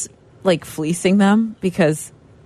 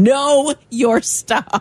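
high, bossy, demanding shouted yell; 5 semitones higher than usual. Imagining Shea as the voice of a bus-stop announcement, Shea's yelling voice. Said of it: "this voice of Shea yelling".

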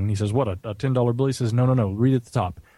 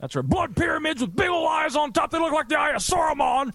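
put-on ranting voice, pitched higher. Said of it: "You have to say that in your Alex Jones voice".

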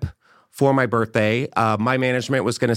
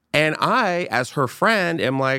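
normal talking voice

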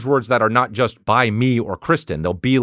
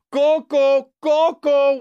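play-acted crying, very high screeching wailing scream. Retelling someone screaming into the Apple remote, imitating him screaming and crying. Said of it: "just Coco screaming in the Apple remote".

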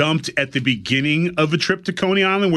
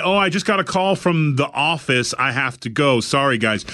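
plain

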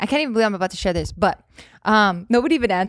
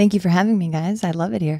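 radio announcer voice, lower; 3 semitones lower than usual. Thanking the hosts for having you back: radio voice. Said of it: "Oh, radio".

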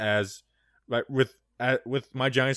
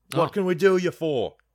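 put-on fake Australian accent, higher; 5 semitones higher than usual. Retelling how the dad answered the phone: imitating a fake Australian accent. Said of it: "half of that was Australian".

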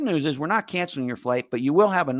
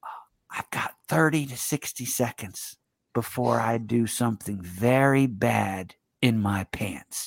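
very slow, close-up whisper; 4 semitones lower, 3 dB quieter than usual. Retelling asking a stewardess for the bathroom: retelling a whisper. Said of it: "I whisper in her ear".

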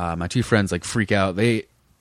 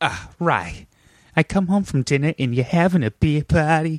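put-on Boston accent, pitched up; 7 semitones higher than usual. Retelling what their dad said on walking into the kitchen, imitating dad's Boston accent. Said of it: "Is that what your dad sounds like?".

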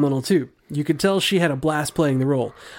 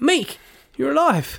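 put-on very high New Zealand accent; 10 semitones higher than usual. Answering a listener's Korg and Meek suggestion, greeting Meek: Korg's Kiwi accent. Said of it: "That was less Kiwi".

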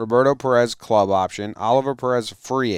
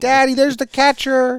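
put-on very high-pitched small little-boy voice; 14 semitones higher, 4 dB louder than usual. Talking baseball, acting out an eight-year-old boy talking to his dad, imitating a little boy. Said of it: "He's like".

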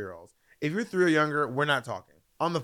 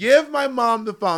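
mock screaming, loud, high and frustrated; 7 semitones higher, 5 dB louder than usual. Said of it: "I'm, like, screaming".

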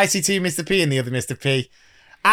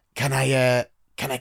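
put-on hoarse, dry, croaky voice; 2 semitones lower, 4 dB quieter than usual. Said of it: "my voice was like this".

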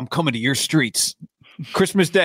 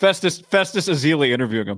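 normal talking voice

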